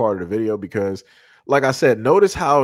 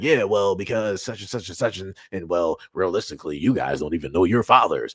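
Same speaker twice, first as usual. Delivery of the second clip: low, bassy, jabbing put-down tone; 5 semitones lower, 3 dB quieter than usual. Retelling what the moderator said to him, imitating a deeper voice. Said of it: "she got bass in her voice".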